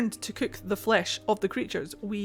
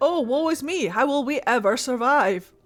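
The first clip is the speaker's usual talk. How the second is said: loud put-on woe-is-me lament; 4 semitones higher, 6 dB louder than usual. Joking about people wandering and eating berries: mock lamenting. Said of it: "They were just wandering around, eating berries, like".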